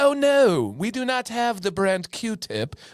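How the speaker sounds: European-sounding British accent. Correcting someone who asked for a brand-name product, in a European British accent. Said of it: "it's like a European British accent".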